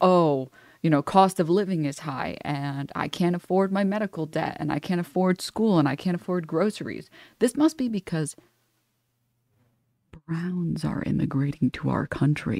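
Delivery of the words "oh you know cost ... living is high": plain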